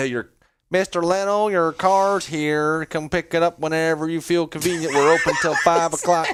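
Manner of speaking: put-on Southern US accent, car dealer style. Speaker imagines a car dealer telling a customer his car is ready; Southern car dealer accent. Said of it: "this a Southern car dealer?".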